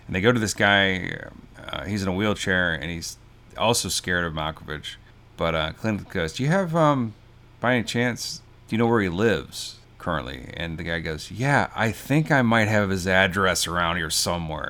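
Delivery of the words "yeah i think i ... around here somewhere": put-on, super sarcastic tone. Recounting a scene, quoting a man asked for someone's address; imitating a super sarcastic reply. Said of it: "he says it super sarcastic".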